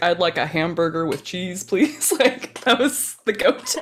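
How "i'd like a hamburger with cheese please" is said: fake American accent from a British speaker. Mimicking a British man's go-to American accent: put-on American accent. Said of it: "American accents from British folks are hilarious. Yeah, his was like".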